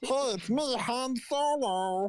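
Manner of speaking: deliberately awful, very high-pitched, slow voice. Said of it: "a terrible voice".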